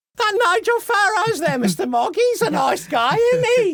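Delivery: squeaky, very high-pitched comic voice with put-on accent. Mimicking what everyone is saying about politicians, in a Monty Python accent. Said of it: "you in that Monty Python accent tonight".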